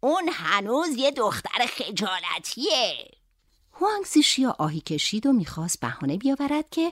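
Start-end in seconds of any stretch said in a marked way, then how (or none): 0.0-3.1 slow, unhurried, spoken through a laugh. The grandmother speaks about the girl with a laugh. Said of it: "مادر بزرگ با خنده گفت".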